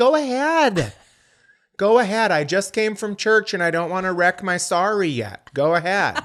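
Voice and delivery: overly courteous, polite Minnesota voice. Mocking polite drivers at a four-way stop: imitating polite Minnesota drivers. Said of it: "nobody goes 'cause they're like".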